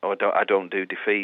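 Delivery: ordinary talk, nothing marked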